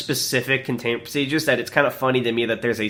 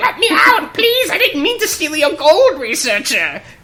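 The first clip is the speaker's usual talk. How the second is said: very high, loud, put-on pleading goblin voice; 7 dB louder than usual. Acting out a jailed goblin begging a researcher: put-on goblin voice. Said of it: "He's like".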